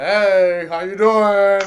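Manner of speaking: put-on very slow, deep, loud old voice, "hey" stretched. Imitating a ring announcer's greeting: Jeremiah Gallegos deep voice. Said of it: "with his deep old voice".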